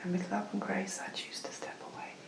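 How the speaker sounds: soft, hushed, breathless whisper.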